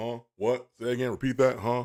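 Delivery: plain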